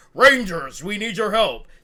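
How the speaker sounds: loud, slow, deliberate authoritarian tone. Contrasting the two ways Zordon sounds: authoritarian Zordon voice. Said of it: "Instead of the authoritarian".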